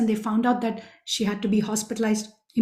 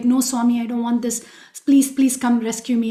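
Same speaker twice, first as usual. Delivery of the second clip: put-on panicky, pleading tone. Retelling what a woman in labor said when offered an epidural; imitating a panicky plea. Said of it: "she was a little panicky".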